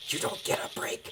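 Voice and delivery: put-on hushed whisper. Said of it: "what we're whispering about".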